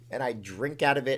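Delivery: plain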